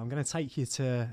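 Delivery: ordinary delivery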